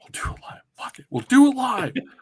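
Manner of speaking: high, loud meltdown rant. Imitating a live on-air meltdown: Bill O'Reilly impression. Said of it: "it was Bill O'Reilly".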